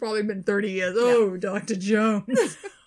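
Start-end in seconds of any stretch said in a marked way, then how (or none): 1.0-2.6 loud, suggestive, sexual-sounding delivery. Retelling a story about a man from work, imitating a sexual-sounding voice. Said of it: "it was the most sexual sounding thing".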